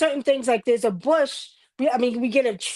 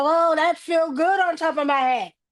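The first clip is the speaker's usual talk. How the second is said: slow, drawn-out demon creature voice; 4 semitones higher than usual. Retelling what the demon said after salt hit its head: imitating the demon talking. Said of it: "That demon was like".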